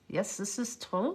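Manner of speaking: put-on Russian accent with a German edge. Retelling what a woman said on a walk: imitating Russian accent with slight German twang. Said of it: "she does sound Russian with a slight German twang".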